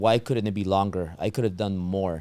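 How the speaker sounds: normal talking voice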